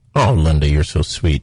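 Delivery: very deep voice, dropped way down low. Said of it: "Did you hear how I deepened my voice there?".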